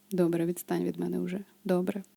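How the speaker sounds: sleepy, low, flat, emotionless, tired voice. Vocal lesson on timbres, showing a sleepy, emotionless tone. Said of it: "наскільки низьким може бути ваш голос, коли ви втомлені".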